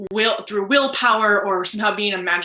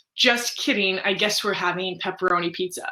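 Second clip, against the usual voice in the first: ordinary talk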